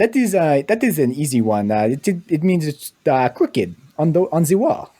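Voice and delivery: put-on Québécois accent, slipping too French. Answering an easy question, put into the speaker's own quebec accent. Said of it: "I got to do it in my in my Quebec accent".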